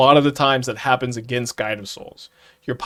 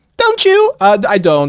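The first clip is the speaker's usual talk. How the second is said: fake British accent, very high and loud; 9 semitones higher, 8 dB louder than usual. After reading out a question about a ban, the speaker answers in a put-on British accent. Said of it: "Sorry for the British accent".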